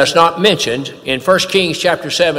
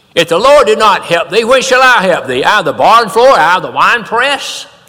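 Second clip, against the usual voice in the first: play-acted, loud, sarcastic tone in kingly voice; 4 semitones higher, 5 dB louder than usual. Retelling a scripture story where a woman begs the king for help, imitating a sarcastic king. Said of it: "He's saying it sarcastically".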